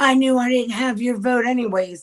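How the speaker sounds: put-on screaming, flung back, pitched high. Retelling an argument with a representative: imitating someone screaming. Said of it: "he screams at me".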